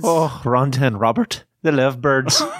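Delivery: put-on Irish brogue. Asked to shout out the donors in a brogue: Irish brogue. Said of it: "with a nice Irish brogue".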